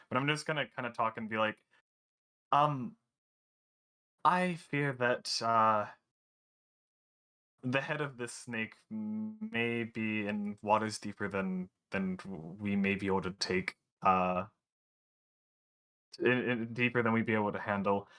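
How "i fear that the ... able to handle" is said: wary, hesitant, slow, cautious, halting delivery. Speaking in character while walking by the meat factory: keeping voice down. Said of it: "trying to keep my voice down".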